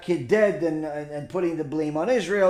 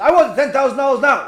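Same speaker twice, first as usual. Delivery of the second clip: very loud, high-pitched, demanding yell; 9 semitones higher, 8 dB louder than usual. Telling a joke, acting out a bank customer: retelling a yell in a joke. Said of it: "you don't have to yell at me".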